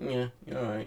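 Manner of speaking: little, tiny, small, soft voice. Joking about feeling weird as a podcast host: little tiny voice. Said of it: "my little tiny voice that's just like".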